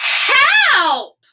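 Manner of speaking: piercing yell, very high and very loud. Explaining exclamation points, being loud to get attention: loud 'help!'. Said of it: "we need to be loud and get somebody's attention".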